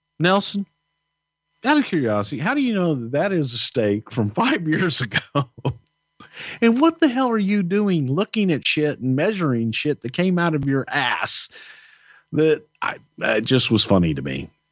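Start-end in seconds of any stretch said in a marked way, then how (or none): 0.2-11.5 put-on laughing through the words, high, swooping. Retelling own question to nelson about the steak: retelling own words while laughing. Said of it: "I just remember just laughing, going".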